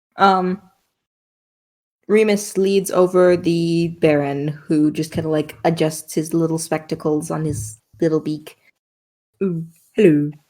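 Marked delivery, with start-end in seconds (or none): 9.4-10.3 odd, glitchy-sounding voice. Voicing the Baron greeting the party: Orpheus the Baron's voice. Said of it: "was that his voice or was that a glitch?".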